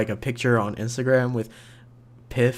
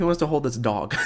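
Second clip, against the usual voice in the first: usual speaking voice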